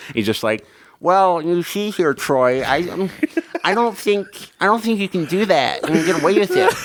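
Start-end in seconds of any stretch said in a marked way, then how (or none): 1.0-6.7 high, nerdy eighties-movie style voice. Imitating the nerd from eighties high school movies: eighties movie nerd voice. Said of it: "whenever I picture the little nerd".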